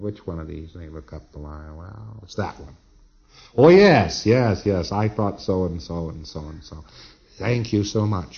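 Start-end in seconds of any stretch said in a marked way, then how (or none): 7.4-8.4 sarcastic, mock-thankful tone. Explaining a checking procedure, the speaker thanks the other person, sarcastic thanks. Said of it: "I say sarcastically".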